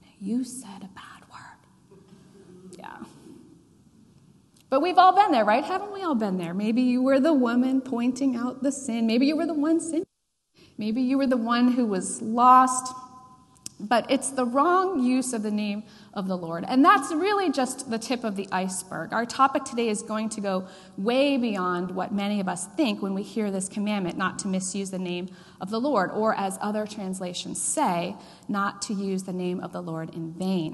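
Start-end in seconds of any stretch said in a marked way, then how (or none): 0.2-2.8 soft, gentle, slow whisper with a reproachful tone. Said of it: "just softly says".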